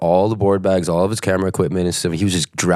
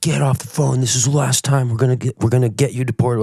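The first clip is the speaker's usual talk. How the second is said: put-on police officer yell, high, kept small; 6 semitones higher than usual. Retelling an officer at customs telling him off: imitating an officer screaming. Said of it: "screaming at me".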